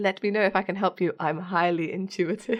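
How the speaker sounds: ordinary talk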